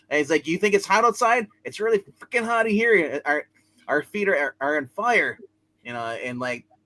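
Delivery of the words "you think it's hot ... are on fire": high, loud yelling. Retelling a scene, an editor yelling at Peter: yelling as J. Jonah Jameson. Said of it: "classic Jonah yelling".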